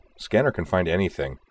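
ordinary delivery

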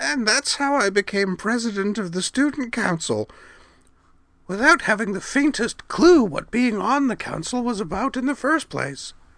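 put-on very high, creaky old-woman voice. Wakaba, talking to herself, plays her future grandmother self: creaky old-woman voice. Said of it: "said in a creaky voice".

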